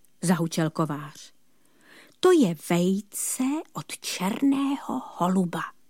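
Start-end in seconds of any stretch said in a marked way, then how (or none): 2.2-5.6 sly, secretive, conspiratorial confiding tone. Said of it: "řekl spiklenecky čert".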